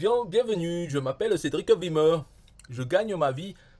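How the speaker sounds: put-on, laid-on northern French accent. Speaker reads out a man's information page in a put-on northern French accent. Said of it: "je fais l'accent".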